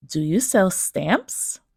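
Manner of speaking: rising intonation at the end on stamps. Lesson on rising intonation in questions: pitch rising at end on 'stamps'. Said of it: "rising intonation. That means the pitch of the voice rises at the end".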